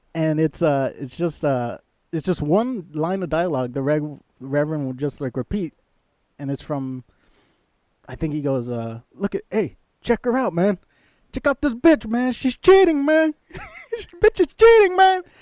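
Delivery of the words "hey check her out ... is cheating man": put-on very loud, shrill yell in swooping Mexican accent. Describing a favorite deleted scene, speaker quotes the Reverend's line: the Reverend's Mexican accent. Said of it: "He's doing like this Mexican accent".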